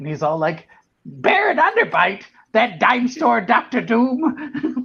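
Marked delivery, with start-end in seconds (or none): 1.1-4.8 mock outraged, swooping, very high, very slow. Quoting a cartoon character getting mad: imitating a character getting mad. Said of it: "when he gets all mad and he's like".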